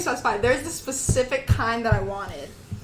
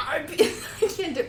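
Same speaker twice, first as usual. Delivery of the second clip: giggling, slightly higher voice. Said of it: "I can't do it 'cause I laugh".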